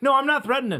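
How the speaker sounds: imitated angry yell. Retelling a customer at the car dealership yelling on the phone: imitating a man yelling on the phone. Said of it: "this guy was yelling on the phone".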